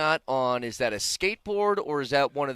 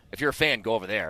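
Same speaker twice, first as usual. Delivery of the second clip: put-on stern old lady voice; 3 semitones lower than usual. Retelling what an old lady said on walking in: imitating a stern old lady. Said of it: "very nice old lady was very stern with me".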